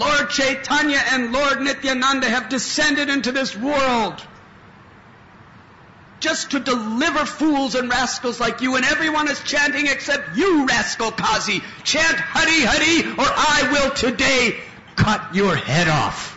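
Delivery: very high, wild, tumultuous screaming. Retelling how he burst into a house late at night: tumultuous scream. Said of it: "screamed out in a tumultuous voice".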